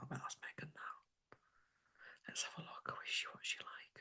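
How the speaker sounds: conspiratorial whisper.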